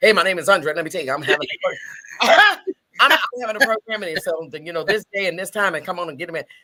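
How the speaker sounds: hurried, rushed, rattled-off on-air sales spiel. Retelling a rushed TV interview, imitating herself talking fast. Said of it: "talking fast, talking fast".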